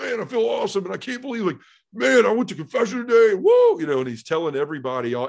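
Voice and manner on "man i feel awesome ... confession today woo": put-on, very high, loud, thrilled excited hollering. Retelling a man running around after confession: imitating Jay yelling excitedly. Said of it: "you need to quit yelling".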